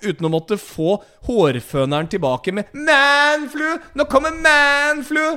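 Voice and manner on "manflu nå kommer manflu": very high, generic stock lady voice. After mentioning a sore throat, a speaker acts out the reply: generic woman impression. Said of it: "Hvem er det du etterligner nå egentlig? Er det en sånn generell dame?".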